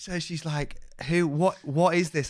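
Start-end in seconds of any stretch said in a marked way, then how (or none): 1.1-2.3 very loud, high-pitched screaming. Retelling a phone call from mum: imitating mum screaming. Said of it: "she's screaming down the phone".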